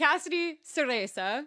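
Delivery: clumsy put-on Italian accent. Host introducing a guest on the show, in a really bad Italian accent. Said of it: "That's my really bad Italian accent".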